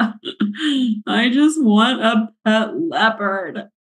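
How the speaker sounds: put-on play-acted, high-pitched, very slow, tearful child bawling. Speaker retelling what a crying little girl said, imitating a child bawling. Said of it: "these were big crocodile tears".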